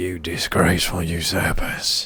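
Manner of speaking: slow, harsh, strained, throat-straining voice. Voicing a character in a scene, in a harsh throat-straining voice. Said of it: "I can't do that voice, it's going to shred my throat".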